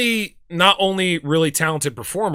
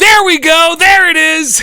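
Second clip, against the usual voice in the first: shrill, very loud, high excited yell; 11 semitones higher, 9 dB louder than usual. Recalling a concert, the speaker acts out what they shouted, retelling own shouting. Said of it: "So I went from being super skeptical to shouting".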